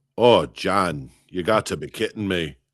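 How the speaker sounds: put-on Scottish accent resonating in the chest. Imitating the mother's friend calling the mother John, imitating Betty's Scottish accent. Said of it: "That's what she would say".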